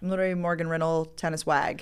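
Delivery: ordinary delivery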